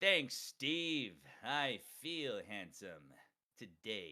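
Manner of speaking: slow, crisply enunciated, precise character voice. Showing the voice he combined from others: Captain character voice. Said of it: "So you get you get Captain like".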